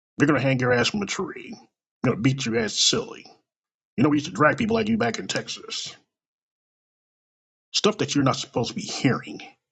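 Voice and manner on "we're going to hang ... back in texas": usual speaking voice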